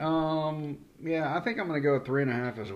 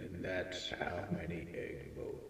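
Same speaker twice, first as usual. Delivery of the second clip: spooky, breathy ghost-story whisper; 6 semitones lower, 13 dB quieter than usual. Prompted to say the egg boat count again in his scariest Halloween voice. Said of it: "in your scariest Halloween voice".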